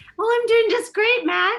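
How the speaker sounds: voice pushed up very high. Ashley answers the host's greeting on the show in a high-pitched voice. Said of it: "came onto the show with that high voice".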